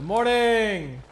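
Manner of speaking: very loud, high-pitched, full-on shout. Sakura Bakshino acts out her Bakshin greeting initiative, yelling a greeting. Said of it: "Why are you yelling at me?".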